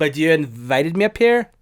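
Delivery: loud voice with a bad Scottish accent.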